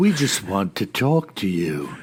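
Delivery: put-on low, slow, deadpan creepy child voice. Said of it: "that slow, deadpan voice".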